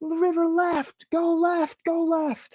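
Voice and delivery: shouting. Speaker retells yelling at people in a boat drifting too far: retelling a yelled instruction. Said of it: "So I'm yelling at them like".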